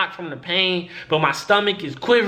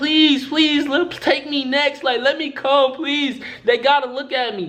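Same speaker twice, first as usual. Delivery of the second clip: urgent, high, repeated pleading beg; 7 semitones higher than usual. Retelling how people in the waiting room begged the assistants: imitating people begging. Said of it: "They begging them".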